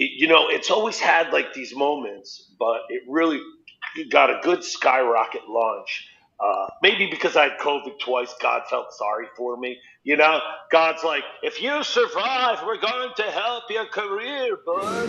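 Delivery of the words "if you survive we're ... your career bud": put-on, pitched-up elderly man voice.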